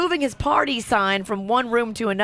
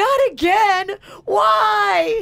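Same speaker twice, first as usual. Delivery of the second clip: put-on shrill, high sobbing child's whine, "why" stretched; 11 semitones higher, 4 dB louder than usual. Parent retells their son falling and crying after getting hurt: imitating a child crying. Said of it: "starts crying and goes".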